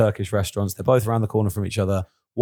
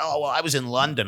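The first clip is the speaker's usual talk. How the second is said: put-on American man's accent, higher; 5 semitones higher, 4 dB quieter than usual. Retelling what a man answered the speaker's question, in an american accent. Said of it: "Do your American accent".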